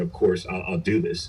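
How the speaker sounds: ordinary talk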